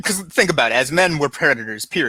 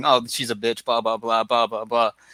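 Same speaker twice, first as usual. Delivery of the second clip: low, grumbling, half-swallowed muttering; 3 semitones lower, 4 dB quieter than usual. Imitating men who leave the room after an argument: imitating muttering under breath. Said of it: "they're muttering".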